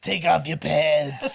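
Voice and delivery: fake hoarse, raspy voice. Imagining the actor playing a role in a drunk history: Harvey Fierstein voice. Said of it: "doing your Harvey Firestein voice".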